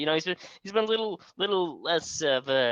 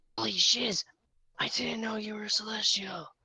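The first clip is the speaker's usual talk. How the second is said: whisper, higher; 6 semitones higher than usual. Playing a character who whispers to a celestial being: whispering in character. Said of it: "he's whispering to him".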